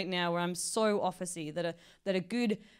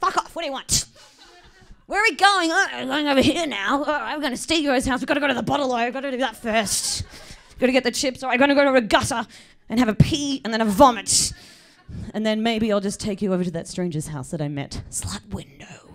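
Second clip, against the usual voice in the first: put-on very loud, high, drunken ranting voice; 5 semitones higher, 11 dB louder than usual. Doing the Google Maps guy as a drunk. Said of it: "drunk Google Maps".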